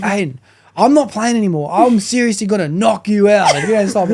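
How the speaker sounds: high-pitched, heated, fed-up, angry outburst. Retelling a friend's outburst at table teasing: imitating someone losing his temper. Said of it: "Jackson eventually loses".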